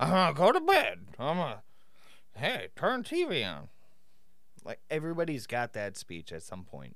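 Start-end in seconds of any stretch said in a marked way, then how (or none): 0.0-3.7 put-on high, tipsy, drunken talk. Comparing a character to how everyone sounds after drinking, imitating drunk 4 a.m. speech. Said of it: "what every person sounds like after drinking a whole night until 4 a.m".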